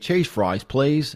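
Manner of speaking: put-on Australian accent. Showing the only line that can be done in an accent: put-on australian accent. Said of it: "And that's Australian".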